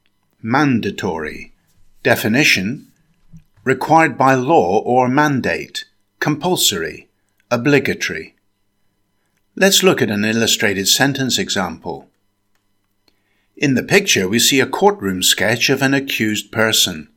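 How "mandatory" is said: mandatory with MAN stressed, four syllables. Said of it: "Stress the first syllable".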